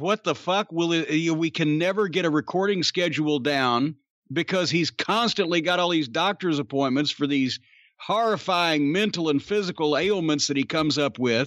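ordinary delivery

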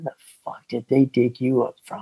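kind of whispering. Retelling how an instructor got up in his face, kind of whispering. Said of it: "kind of whispers".

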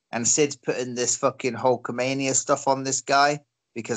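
ordinary talk

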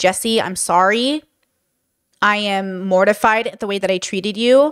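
calm, settled, grounded low voice, slow. Showing how her apology should sound, in a grounded, low tone. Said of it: "her tone needs to be grounded. Like, not the high, but down".

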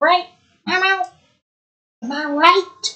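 very slow, drawn-out military cat voice. Trying out voices, the speaker attempts a cat voice, ROTC cat voice. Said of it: "I sound like an ROTC cat".

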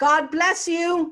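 high, loud, slow calling-out voice. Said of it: "I heard my baby sister call out".

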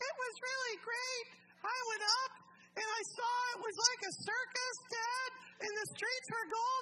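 very high-pitched voice. Retell what Joel told his dad about going to heaven, imitating Joel's high voice. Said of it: "Joel's talking in his high voice".

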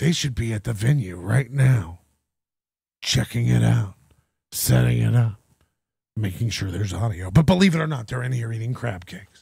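put-on ASMR narration. Mocking an ad's narrator who sounds like he's on an ASMR mic: imitating ASMR mic voice. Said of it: "an A S M R mic".

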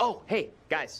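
overly loud, blaring. Greeting the group in a scene, the speaker comes in too loud. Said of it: "why are you so loud?".

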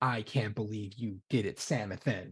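mock artificial intelligence voice. In a role-play, the ship's AI pops up on a screen: Calvin, the ship's AI voice. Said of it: "I'm just the AI".

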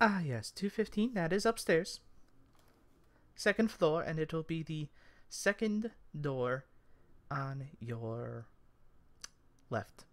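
put-on elderly halfling woman voice. Storyteller voicing a character answering a player's question, old halfling lady voice. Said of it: "It's an older halfling lady".

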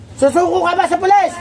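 harsh, high, sharp, barked demanding shouts.

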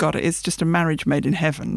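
ordinary talk

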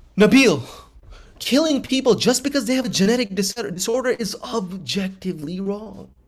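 play-acted impassioned, insistent tone, high-pitched. Acting out someone arguing with a Nazi: imitating a passionate, insistent protest. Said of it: "You're pounding the table on this".

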